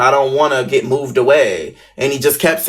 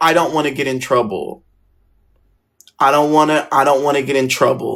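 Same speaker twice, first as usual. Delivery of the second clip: mock tearful, sobbing, pleading crying voice. Speaker retells what he said when given the chance to talk, imitating someone crying. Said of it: "then he starts crying some more".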